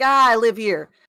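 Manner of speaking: very loud, put-on fake New York accent. Recounting answering street sellers who approached, in a fake New York accent. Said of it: "my best fake New York accent".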